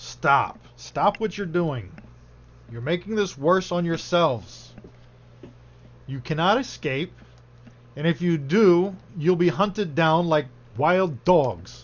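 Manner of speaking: loud, creepy, barked shouting. Thirty-one shouts commands at those trying to escape: creepy Cragor voice. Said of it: "Creepy voice".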